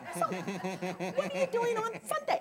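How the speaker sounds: quippy, sing-song little voice, very high. Retelling a friend's lunch invitation: Helen's quip little voice. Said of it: "You know how she has this quip little voice".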